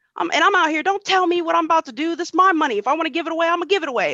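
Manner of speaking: mock high-pitched shouting yell. Retelling an argument with a man on the street, retelling own yelling. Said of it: "Like I'm yelling".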